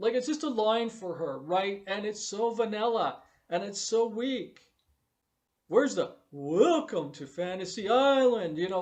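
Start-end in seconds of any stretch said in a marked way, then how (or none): 5.7-8.6 mock grand, enthusiastic tone, louder. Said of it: "the enthusiasm".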